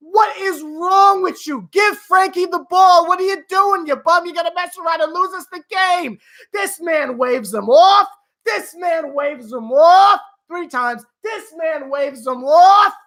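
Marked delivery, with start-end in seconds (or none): 0.1-6.2 put-on screaming, higher pitch. Retelling watching the game at home: imitating own screaming at TV. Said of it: "I was screaming".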